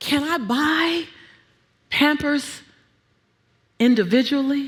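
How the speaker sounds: whispered speech. Retelling a question to the teller at the store: retelling a whisper. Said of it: "I whispered to the teller".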